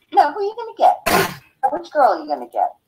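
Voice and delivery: small, little high-pitched voice. Imitating Marion questioning the two casting directors: Marion's little voice. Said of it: "with that little voice".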